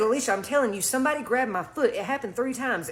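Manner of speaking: plain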